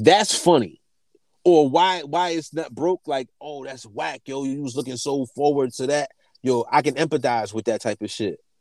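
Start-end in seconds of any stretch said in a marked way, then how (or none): none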